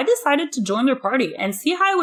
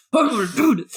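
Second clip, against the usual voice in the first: put-on masculine, mock macho voice. Acting out a confident self-talk, put-on masculine voice. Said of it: "I'm gonna say it out loud for you".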